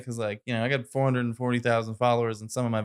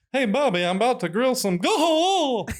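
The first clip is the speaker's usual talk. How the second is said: very high, loud call, held long and drawn-out; 13 semitones higher, 5 dB louder than usual. Acting out a scene of a cartoon dad walking in on Bobby: Hank Hill voice. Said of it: "You gotta be able to do the Hank Hill".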